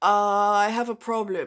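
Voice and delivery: terrible, botched put-on Italian accent. Retelling what a man said when they talked friday: bad imitation of italian accent. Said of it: "I'm probably doing a terrible accent, imitation of his accent".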